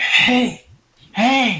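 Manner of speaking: forceful, loud, high yelled whisper. Calling out to a companion in a dark tunnel, whisper-yelling. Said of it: "whisper yelling and very loudly".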